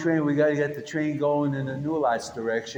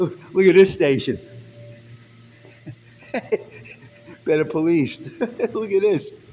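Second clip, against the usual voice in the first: sarcastic, raised voice, laughing through words; 4 semitones higher, 5 dB louder than usual. Showing a subway station that is said to be better policed, laughing while talking. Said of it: "I'm laughing, but it's not funny".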